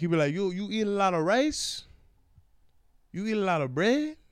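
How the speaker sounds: put-on Cuban accent. Quoting a man from Cuba asking what he eats, imitating a Cuban accent. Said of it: "He's from Cuba".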